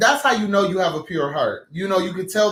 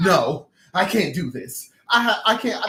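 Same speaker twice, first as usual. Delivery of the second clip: mock, very slow, anguished, distraught voice. Retelling how the other speaker reacted after the spill: imitating someone distraught. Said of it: "you were so distraught".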